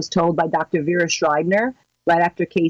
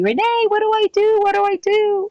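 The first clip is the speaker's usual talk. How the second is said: very high-pitched, tearful, crying, pleading tone. Retelling a call from a supporter who cut her finger off: imitating someone crying. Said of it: "she calls me crying like a baby".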